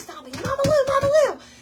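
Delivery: mock shrill, very high-pitched, loud yelling. Recounting running over to stop Mama Lou from peeing, retelling a yell. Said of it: "And I'm yelling at her".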